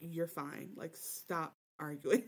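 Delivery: put-on under-the-breath mutter. Retelling what a friend told another, imitating speaking under her breath. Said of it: "She's just under her breath telling her".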